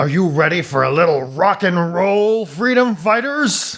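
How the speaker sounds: slow, high, taunting villain voice.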